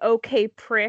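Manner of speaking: plain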